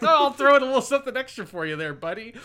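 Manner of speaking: easygoing, offhand, chummy voice. Retelling the dragon greeting Lord Piccolo: imitating the dragon's casual tone. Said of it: "very, like, casual back and forth".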